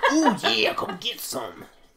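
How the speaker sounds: high, swooping voice with wide pitch swings. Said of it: "It's pretty much Randy Savage".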